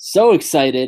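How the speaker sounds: mock enthusiasm, sarcastic and plainly insincere. Answering about a tag team battle royal with sarcastic fake excitement. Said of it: "can you sense the sarcasm?".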